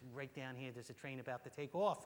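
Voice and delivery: imitated New York accent. Retelling what a woman from Amtrak told them, New York accent. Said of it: "in her finest New York accent".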